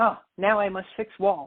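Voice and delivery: put-on very strong Japanese accent, laid on thick. Retelling what the speaker's dad said after they went through a wall, heavy japanese accent. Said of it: "in his very heavily Japanese accent".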